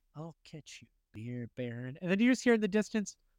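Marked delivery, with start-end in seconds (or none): 0.2-2.0 hushed half-whispered mutter under the breath. Retelling a cartoon scene where a character mutters alone: imitating Homer half-whispering. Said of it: "where he's just whispering to himself".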